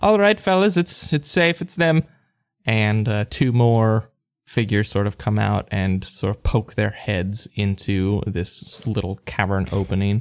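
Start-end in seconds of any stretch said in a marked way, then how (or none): 0.0-2.0 high-pitched hollering. A game master voices a character calling back to the fellas behind her; hollering out. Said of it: "hollers out".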